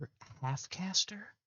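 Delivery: high, secretive whisper. Voicing a nervous girl leaning to a fighter's ear: whispering in character. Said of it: "he walks over and just whispers into your ear".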